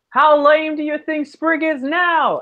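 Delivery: shouting.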